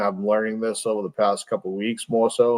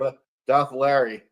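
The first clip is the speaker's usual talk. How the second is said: choppy, broken-up voice cutting out like bad phone line; 3 semitones higher than usual. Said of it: "You sound like Larry when he called up that time".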